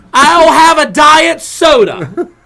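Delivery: put-on loud old man voice. Retelling how an old man ordered at the counter, imitating loud ordering. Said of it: "What's he yelling for?".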